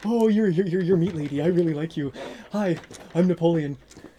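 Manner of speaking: dog voice, stammering repeats, stumbling over you're. Voicing the dog Napoleon, who greets Margaret: Napoleon dog voice. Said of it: "he looks straight up at you and is like".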